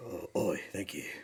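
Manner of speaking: very quiet, low put-on Cockney accent. After agreeing not to try Cockney, a host says thanks; Jason Statham Cockney impression. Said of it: "Is that Jason Statham?".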